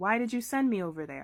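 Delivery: ordinary talk, nothing marked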